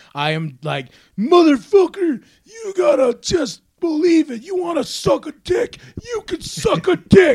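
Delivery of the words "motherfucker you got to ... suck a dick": acted drunk ramble, very high-pitched and slow. Retelling recording the positivity book while drunk: imitating own drunk self. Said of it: "I am drunk the entire time".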